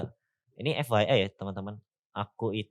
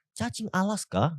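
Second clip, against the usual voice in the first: very high rise-fall narrator voice on "cacing Alaska"; 10 semitones higher than usual. Copying the narrator of a video about giant Alaska worms: imitating a video narrator. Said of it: "aku bener-bener tiru tuh".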